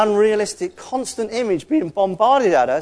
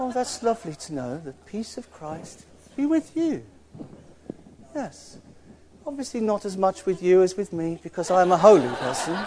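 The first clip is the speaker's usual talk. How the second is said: soft, precious, holier-than-thou pious voice; 2 semitones lower, 6 dB quieter than usual. Mocking how supposedly perfect Christians talk, in a precious holy voice. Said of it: "They talk a little bit like this because they're just a little bit precious and holy".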